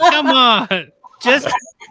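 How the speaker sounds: loud, slow, pleading coaxing tone. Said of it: "And it's like".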